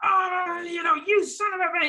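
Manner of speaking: very high-pitched, furious, angry outburst. Acting out how a student delivers lines as angrily as possible: imitating an angry student. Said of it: "as angrily as possible".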